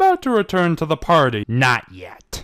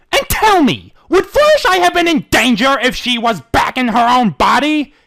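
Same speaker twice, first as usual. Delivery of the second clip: sharp, quick, snapping tone; 9 semitones higher, 6 dB louder than usual. Reading a story aloud, a character fires back at the showmare. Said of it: "He fired back, / Welp, here's my first ever dramatic reading".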